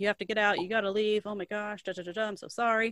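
plain

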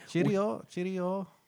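mock British accent. Mocking restaurant staff who put on British accents, mock British accent. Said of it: "now they're trying to do that".

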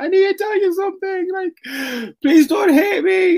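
mock crying, high, tearful, pleading, drunk-sounding voice. Retelling coming home drunk and sitting on mum's bed: retelling crying while pleading. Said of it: "I sat at the bottom of mum's bed and I cried".

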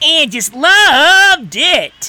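high, loud cartoon rabbit voice. Describing a TV spot where cartoon characters give reviews: Bugs Bunny voice. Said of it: "Bugs Bunny just going".

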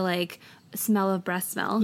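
ordinary delivery

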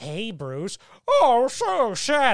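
very slow, wavering, pitch-swooping put-on villain voice. Speaker complaining about an actor's voice choices, imitating him, shifting Joker impression. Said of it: "pick a voice. He's always like".

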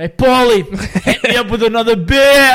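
put-on New York accent. Retelling playing bartender as a kid: put-on new york accent. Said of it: "with a New York accent".

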